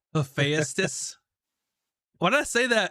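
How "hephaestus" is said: Southern belle accent and voice. Blurting out a single word on stream, like a Southern belle. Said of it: "It's like a Southern belle trying to say Hephaestus".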